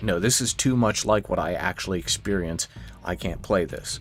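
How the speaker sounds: ordinary talk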